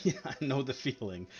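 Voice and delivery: put-on sheepish tone. Retelling his answer to a stranger lost after walking through the portal: retelling a sheepish reply. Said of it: "he kind of like sheepishly is like".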